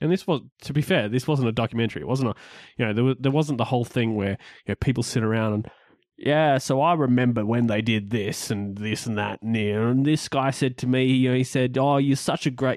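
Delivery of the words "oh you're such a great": failed put-on British accent sounding outback Australian. Retelling what a guy said to him, in an accidental outback Australian accent. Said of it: "Was that supposed to be your British accent? Because it sounded really, really like outback Australian".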